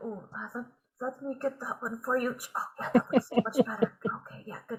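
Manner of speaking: soft mumbling and muttering under the breath. A player voices his character pruning an awakened shrub, muttering under his breath. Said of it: "He's kind of like muttering under his breath".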